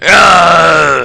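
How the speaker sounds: very high, very loud, rough, drawn-out manly pirate scream. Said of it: "it also sounds like manly screams".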